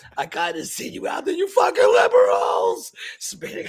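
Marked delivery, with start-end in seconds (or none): 1.4-2.9 all-out, loud horror-movie screaming. Picturing the other speaker spinning in a circle: imitating someone screaming. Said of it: "in a circle screaming".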